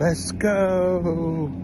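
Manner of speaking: put-on little baby-talk voice, drawn-out go. Retelling what a baby said, in a baby voice. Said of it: "in a baby voice".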